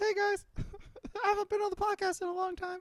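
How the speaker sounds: very high, squeaky cartoon mouse voice. Playing Matt Carney returning to the podcast, in a Mickey Mouse voice. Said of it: "It's like Mickey Mouse".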